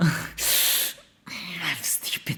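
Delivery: slow, breathy, scolding whisper.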